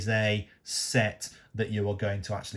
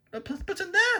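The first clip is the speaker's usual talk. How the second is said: voice suddenly jumping up much higher. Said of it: "my voice went up".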